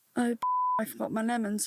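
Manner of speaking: put-on muttering under the breath. Retelling what a mother said in the car: imitating muttering under breath. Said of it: "she muttered under her breath".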